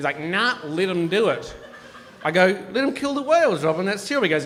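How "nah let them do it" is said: slow, froggy frog-man voice. Retelling a conversation with Robin, imitating Robin's frog-like voice. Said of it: "looks and sounds like a frog".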